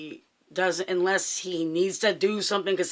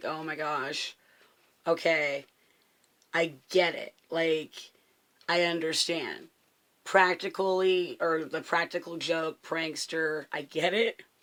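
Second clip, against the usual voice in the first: ordinary delivery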